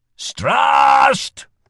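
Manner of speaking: very high, loud shout. A merchant, already growling, raises his voice, shouted. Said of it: "he shouted".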